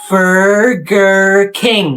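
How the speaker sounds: very slow, drawn-out pronunciation. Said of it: "pronounce where we are very slowly".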